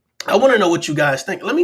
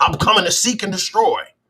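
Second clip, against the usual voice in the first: plain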